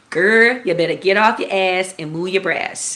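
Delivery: put-on New Orleans accent. Retelling how her mother opened the curtains and spoke: imitating mother's New Orleans accent. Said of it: "she said in her New Orleans accent".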